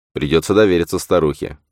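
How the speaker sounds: plain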